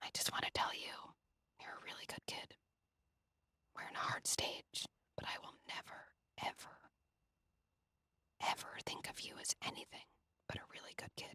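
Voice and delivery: quick, hushed, very quiet fast whisper. Showing parents how to whisper a message to their kid: whispering to a child. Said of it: "Whispering to your kid".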